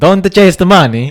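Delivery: very loud, shrill, very high put-on Italian accent. Asked to do the line italian, saying it with an italian accent. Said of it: "Can you do it Italian?".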